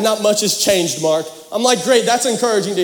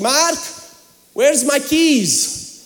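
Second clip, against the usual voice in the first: put-on Romanian accent, higher; 6 semitones higher than usual. A son retells his mother calling him about her car, imitating her Romanian accent. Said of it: "she's Romanian, so okay, so just bear with me".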